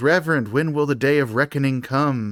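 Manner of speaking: ordinary delivery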